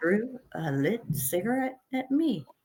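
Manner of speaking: acted calm voice. Retelling a fight after a man threw a lit cigarette, retelling own calm voice. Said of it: "I went completely calm at this point".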